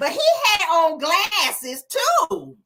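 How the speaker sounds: deliberately grating, annoying high, drawn-out voice. Retelling a conversation, speaker quotes Tisha's reply in Tisha's annoying voice. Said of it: "in that annoying voice that she always likes to use".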